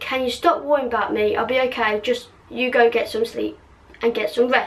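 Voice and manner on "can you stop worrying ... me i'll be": ordinary delivery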